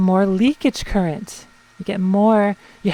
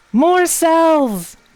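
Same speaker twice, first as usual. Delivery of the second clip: exultant, high, excited yell; 8 semitones higher, 3 dB louder than usual. Adding more cells during an electrical experiment, yelling. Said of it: "Sorry for yelling".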